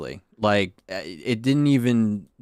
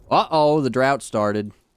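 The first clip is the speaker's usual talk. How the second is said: plain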